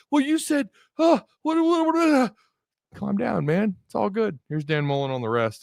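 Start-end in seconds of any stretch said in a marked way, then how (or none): 0.1-2.3 high-pitched, very high, flustered, panicked stammer. Imitating a reporter asking questions: mock panic-attack voice. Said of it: "he sounds like he's having a full-on panic attack".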